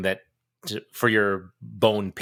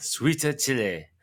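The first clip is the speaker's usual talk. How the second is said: put-on mock Korean accent, higher; 4 semitones higher than usual. Reading a sauce name when asked to: put-on korean accent. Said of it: "can you say it like a Korean?".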